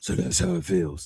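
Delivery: whispered, breathed-out superhero voice. Retelling a scene where Catwoman leaves and Batman answers, in a Batman voice. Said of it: "and Batman goes".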